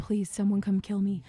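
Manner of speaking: mock whispering. Retelling how they reacted to long pun tangents on a podcast: imitating own whisper. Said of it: "literally be whispering into the mic".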